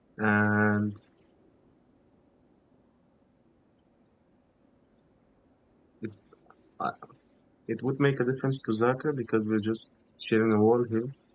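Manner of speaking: soft, hushed whisper. Worried about being too loud through a shared wall, whispering. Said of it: "I think I'm kind of whispering right now".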